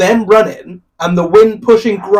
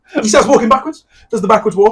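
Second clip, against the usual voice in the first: plain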